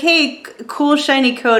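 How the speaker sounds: usual speaking voice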